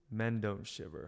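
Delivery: play-acted dry, flat, expressionless deadpan. Retelling what your aunt said when you complained of the cold, deadpan. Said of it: "just deadpan said".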